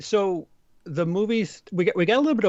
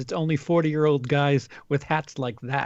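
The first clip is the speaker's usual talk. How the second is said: ordinary delivery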